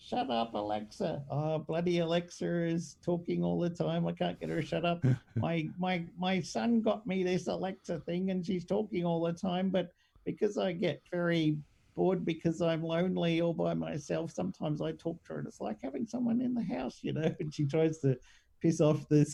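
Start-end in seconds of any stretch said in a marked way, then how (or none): 0.0-17.3 put-on little old lady voice. Talking to a scammer, pretending to be a little old lady. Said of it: "pretends to be a little old lady".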